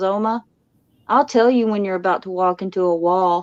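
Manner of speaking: put-on serious, earnest tone. Retelling what the grandson promised about walls: imitating grandson's serious tone. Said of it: "and just so serious, he goes".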